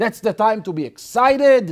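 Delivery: shrill, very high screaming rant. Retelling how he kept screaming at the groom: imitating someone screaming. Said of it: "he continued screaming at him".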